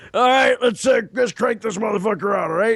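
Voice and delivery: scraggly, ragged, fired-up barking shout, sounding sleepless.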